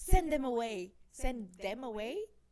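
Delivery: very loud, furious screaming at full volume. Recounting how a woman blew her top to send them away, retelling her yell. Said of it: "She's yelling like she blows her fucking top".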